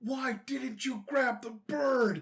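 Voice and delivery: angry, high, slow mock yell.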